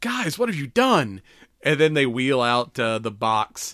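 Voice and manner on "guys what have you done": mock gleeful childlike wonder, very high-pitched. Retelling the character finding Christmas decorations: imitating Peter's childlike joy. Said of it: "childlike joy come on his, onto his face".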